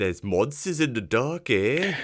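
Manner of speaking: put-on Australian accent. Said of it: "that sounded like an Australian man trying to do an Australian accent".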